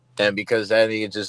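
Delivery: ordinary talk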